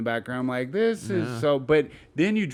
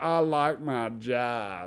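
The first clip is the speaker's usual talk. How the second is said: put-on hillbilly twang, quieter; 4 dB quieter than usual. Imitating a man from a political ad: imitating a redneck hillbilly accent. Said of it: "random redneck hillbilly son of a bitch that's like".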